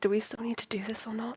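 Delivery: very quiet, hushed side whisper. Playing a character who quietly asks Caliban something: whispering in character. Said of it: "She is gonna whisper to Caliban".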